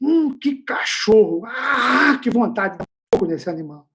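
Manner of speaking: loud angry outburst. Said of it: "Eu fiquei bravo".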